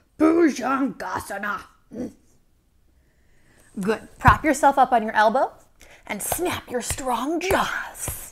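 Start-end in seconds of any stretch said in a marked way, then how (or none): 0.2-1.6 grumpy, cranky shark voice. Leading a yoga pose, the guide says its sanskrit name in a cranky shark voice. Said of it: "say it like you're a cranky shark".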